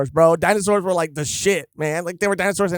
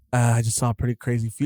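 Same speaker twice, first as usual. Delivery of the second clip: mock cool, calm, exhausted delivery, lower and quieter; 7 semitones lower, 4 dB quieter than usual. Retelling a character's line after he passed out: imitating a cool, calm, exhausted delivery. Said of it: "in the most, like, cool, calm, collected, exhausted way".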